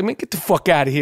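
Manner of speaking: put-on New York accent. Acting out a friend's angry brush-off as he used to talk, for listeners who know him; imitating a New York accent. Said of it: "You know how he talked that New York".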